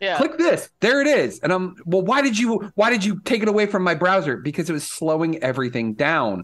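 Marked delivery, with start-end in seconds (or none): 1.8-4.4 high-pitched, screaming complaint. Retelling what she said about her missing browser favorites: imitating someone screaming. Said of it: "she's like screaming at me".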